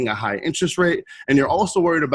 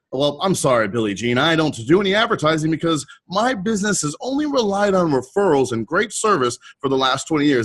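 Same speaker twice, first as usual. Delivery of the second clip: mock smug, self-satisfied, proud bragging; 3 semitones higher than usual. Retelling what a client who avoids advertising says: imitating a smug, proud client. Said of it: "super proudly and smugly".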